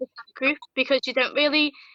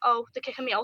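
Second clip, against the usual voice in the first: plain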